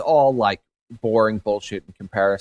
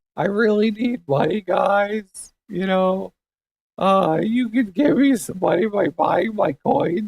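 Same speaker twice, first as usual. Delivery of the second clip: put-on near-tears voice, much higher pitch; 12 semitones higher than usual. Speaker performs a trader type figure, doing a Josh voice on the verge of tears. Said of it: "Josh voice ... sound like you're on the verge of tears".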